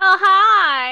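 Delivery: very loud, high, passive-aggressive, "hi" stretched. Co-host greeting everyone right after being introduced: passive-aggressive greeting. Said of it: "That was a real passive-aggressive vibe".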